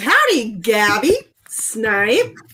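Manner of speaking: strongly exaggerated, overdone howdy. Reading a viewer's greeting aloud: exaggerated howdy. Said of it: "that was more of a howdy".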